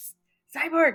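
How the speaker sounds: stage whisper. Whispering in character into the ear of the one carrying her: loud whisper. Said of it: "I whisper into his ear, ear very loudly".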